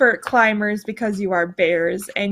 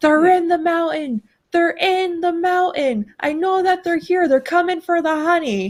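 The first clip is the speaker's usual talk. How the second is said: angry, high, full-lung furious screaming; 8 semitones higher than usual. A storyteller voices an angry Br'er Bear alone in the dark, screaming at the top of his lungs. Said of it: "he is just screaming at the top of his lungs".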